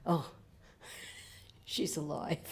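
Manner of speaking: whispered, breathy, weepy, tearful relief. Retelling a cousin's words when she finally walked out: imitating relieved crying. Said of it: "she just started crying from relief".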